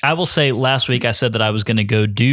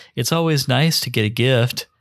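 imitated creepy tone, mock delivery. Retelling what the crazy guardsman in his boat said, imitating a creepy tone. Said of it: "looks at you really creepy and says".

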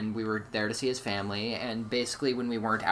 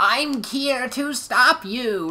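wooden, awful acting, very high, loud, and slow; 9 dB louder than usual. Mocking a character's terrible voice acting, stiff, awful delivery. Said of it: "really awful and, like, stiff".

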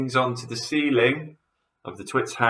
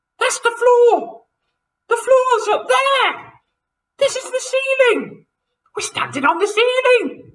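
very high, shrill, alarmed shriek; 7 dB louder than usual. Pointing at the floor, Mrs. Twit screams to Mr. Twit, screaming. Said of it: "screamed Mrs. Twit".

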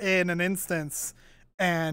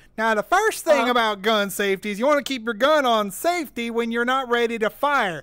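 put-on country-boy southern accent; 3 semitones higher, 4 dB louder than usual. Retelling a redneck in a field explaining gun safety, southern redneck accent. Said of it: "it's so southern".

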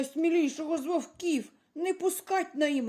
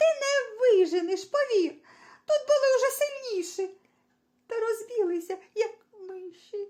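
crying, tearful, weeping; 5 semitones higher than usual. The little grey hare answers the rooster, crying. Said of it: "Перестань, ну, плакать".

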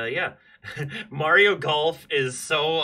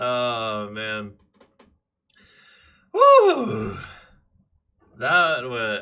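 out of breath, much louder; 3 semitones lower, 4 dB louder than usual. Streamer reacting after a Nintendo Direct, out of breath. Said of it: "I'm out of breath".

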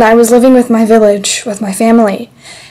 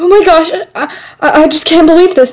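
stunned, shocked, stammering disbelief; 6 semitones higher than usual. Acting a scene in which a frog turns out to be enchanted: shocked. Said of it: "This is so shocking to me".

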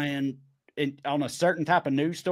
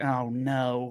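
put-on dismay on "oh no"; 3 semitones lower than usual. Imitating how Californians react on hearing the accent: imitating Californians' alarmed reaction. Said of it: "the way some Californians, like".

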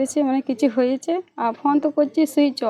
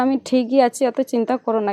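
usual speaking voice

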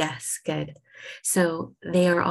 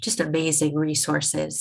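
usual speaking voice

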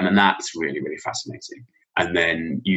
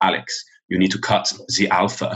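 put-on German accent, best attempt. Retelling advice a visiting German teacher gave him as a new teacher, German accent. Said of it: "I'll do the accent as best I can".

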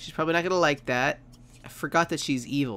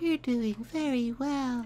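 very high put-on video-game voice; 10 semitones higher than usual. Reading out tasks for a kid named Almond, in a Portal voice. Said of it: "That was my portal voice".

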